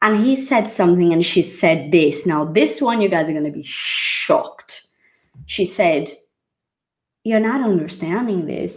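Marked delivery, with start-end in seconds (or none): 7.2-8.8 poor, unconvincing, put-on American accent. Retelling what a woman said to him, in a bad American accent. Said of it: "My American accent is shit".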